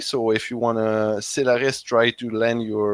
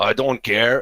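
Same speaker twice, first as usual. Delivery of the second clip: menacing, threatening tone. Voicing a character walking toward a player's character: menacing. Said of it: "he walks, uh, menacingly towards you, saying".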